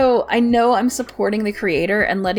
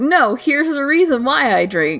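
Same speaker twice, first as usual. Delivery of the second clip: self-justifying, excuse-making addict tone; 3 semitones higher than usual. Saying how gacha spending sounds aloud: imitating an addict. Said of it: "sounds like an addict trying to be like".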